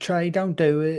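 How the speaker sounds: very high, slow, drawn-out country twang. Imitating the wife telling Trey not to do it: country voice. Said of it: "I made her sound so country like that".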